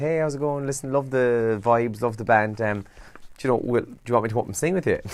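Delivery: ordinary talk, nothing marked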